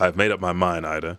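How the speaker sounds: ordinary delivery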